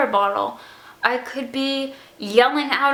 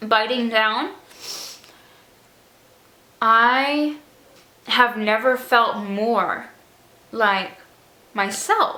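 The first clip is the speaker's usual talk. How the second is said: voice choking up, fighting back tears; 3 semitones lower than usual. Speaker telling what happened to them today, choking up, about to cry. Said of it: "oh my god, I'm gonna cry".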